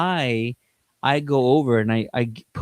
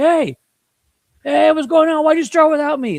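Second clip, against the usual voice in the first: very high, loud scream, hollered over a distance; 7 dB louder than usual. Telling how a man crashed a stage event through the crowd: imitating Michael Rooker screaming. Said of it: "He's screaming at Sean Gunn like".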